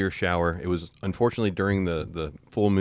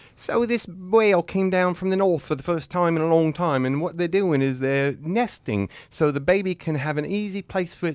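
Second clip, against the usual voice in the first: put-on, fake British accent; 10 semitones higher than usual. After a countdown, starting the take in a british accent.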